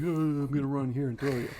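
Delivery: dumb, simple-minded delivery. Describing a game's helper character, imitating Karn as a dumb NPC. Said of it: "He's just kinda like a dumb N P C".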